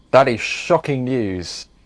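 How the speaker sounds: ordinary talk, nothing marked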